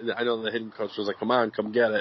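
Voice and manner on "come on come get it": ordinary talk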